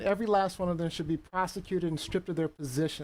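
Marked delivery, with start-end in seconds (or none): none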